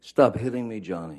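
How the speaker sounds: frantic, upset, freaked-out, high-pitched screaming. Recounting from twenty feet away how a woman screamed: imitating high-pitched upset screaming. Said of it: "she's screaming in in her best um, freaked out".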